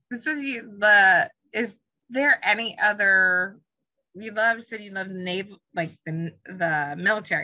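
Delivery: stammering, stumbling, stuttering, restarting mid-sentence. Asking the other person about other military stories, stuttering. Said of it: "I'm stuttering all of a sudden".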